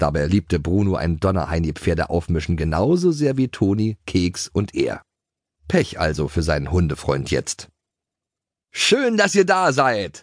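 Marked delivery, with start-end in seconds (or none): 8.7-10.2 very high, full-throated horse-like neigh. A horse pulls forward and greets the riders: neighing at full voice. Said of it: "wieherte Schoko aus vollem Hals".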